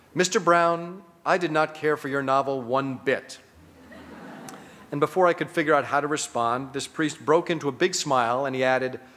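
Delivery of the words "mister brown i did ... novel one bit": plain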